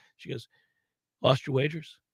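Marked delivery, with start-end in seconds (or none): 1.2-2.0 hushed half-whisper. Retelling what the wife said in bed: imitating wife half-whispering. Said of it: "She just whispers".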